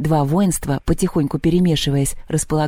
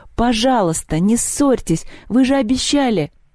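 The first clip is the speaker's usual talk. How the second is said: high, shouted, cried-out pleading tone; 7 semitones higher than usual. Narrating Lyolya calling out to Perun and Polyandra, shouting. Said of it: "закричала Лёля".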